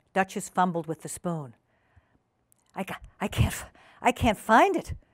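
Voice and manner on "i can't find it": anxious, higher and slower. Narrator reads a guest fumbling with a spoon over a pie; anxious. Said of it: "she said anxiously".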